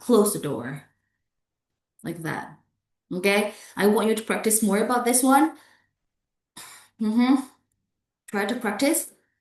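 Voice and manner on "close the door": low, falling intonation on close the door. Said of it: "Falling intonation".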